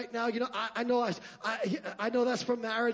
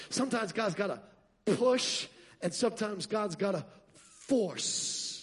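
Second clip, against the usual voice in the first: ordinary talk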